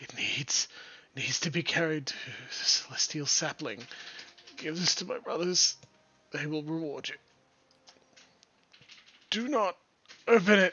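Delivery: weak, raspy, dying-sounding voice. Narrating a monk handing over a scroll case, rasping. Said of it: "he rasps".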